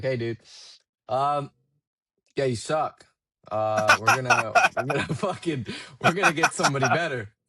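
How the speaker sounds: flat, blunt delivery. Retelling what a man flatly told him in an office: retelling blunt flat-out words. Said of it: "he flat out tell me like".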